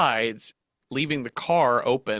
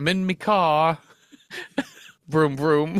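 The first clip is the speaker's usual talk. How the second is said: put-on young British child's voice and accent; 3 semitones higher than usual. Speaker recalls a classic Vine of a British kid, British kid accent. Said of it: "the British kid being like".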